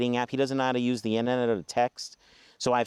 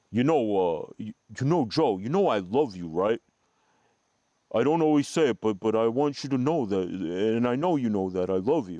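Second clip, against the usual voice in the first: halting, stumbling movie-boxer voice. Retelling a father's words outside the car: Rocky voice from Rocky Part One. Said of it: "he sounds kinda like Rocky in Rocky Part One".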